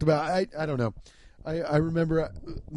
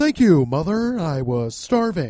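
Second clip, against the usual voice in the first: loud, belted-out, annoying comic voice; 7 dB louder than usual. Recalling how boys walked around quoting movies: Jim Carrey voice. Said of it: "the Jim Carrey voice".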